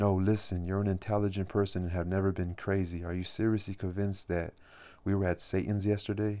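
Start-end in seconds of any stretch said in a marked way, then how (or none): none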